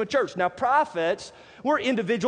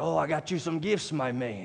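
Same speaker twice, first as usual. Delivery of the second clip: soft, full put-on pirate character voice; 7 semitones lower, 6 dB quieter than usual. Imagining what a pirate says to a freed captive, pirate impression. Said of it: "That's my very best pirate impression".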